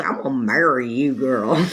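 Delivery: natural speaking voice, deep and dropped low. Retelling what a man she dated told her, imitating David's way of talking. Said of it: "That's how he talked".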